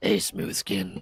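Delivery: raspy ghoul voice, chain-smoker rasp, soft and breathy. Asked to start talking in a ghoul voice, trying one out: chain-smoker ghoul voice. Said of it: "You just sound like you're a chain smoker".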